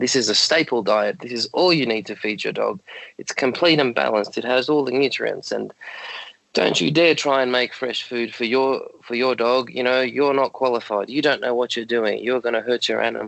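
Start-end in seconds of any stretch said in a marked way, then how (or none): none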